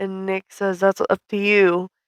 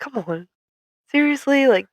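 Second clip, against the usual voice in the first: mock disappointed, sad, slightly high-pitched tone; 6 semitones higher than usual. Retelling a comic scene where an annoyed Steve reacts, mock-sad Steve. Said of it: "Like sad".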